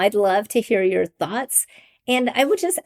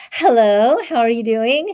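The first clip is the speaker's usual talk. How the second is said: sweet, polite, switched-on telephone voice; 4 dB louder than usual. Recalling how her mother answered the phone, imitating mom's phone voice. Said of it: "And her voice would change".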